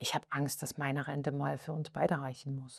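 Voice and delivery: very quiet, embarrassed.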